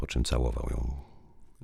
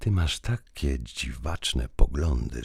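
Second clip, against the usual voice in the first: plain reading voice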